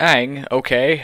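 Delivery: ordinary delivery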